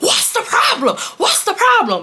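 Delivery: mock very high, swooping screaming. Retelling a hallway fight, imitating screaming at a boy. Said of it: "we're screaming".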